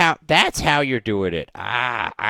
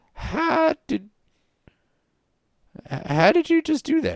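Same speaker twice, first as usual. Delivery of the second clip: put-on very high, creaky, elderly old man voice. Voicing a character who watched the player casually cast a spell, old man voice. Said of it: "You got an old man voice".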